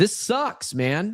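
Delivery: fed-up, annoyed, irritated voice. Podcast host talking to listeners right after the ad read, annoyed. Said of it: "If it sounds like I'm annoyed, it's because I'm annoyed".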